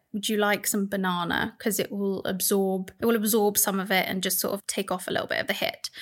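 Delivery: ordinary talk, nothing marked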